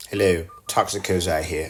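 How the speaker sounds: put-on British accent. Podcast host plugging the show's Discord to listeners, in a British accent. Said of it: "I don't know why I keep doing this British accent".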